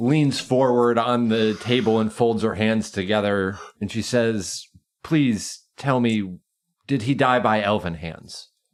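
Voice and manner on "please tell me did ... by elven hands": tearful pleading through welling tears. Narrating a tabletop game, the speaker voices a woman in tears, tearful pleading. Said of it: "You see the tears well up in her eyes".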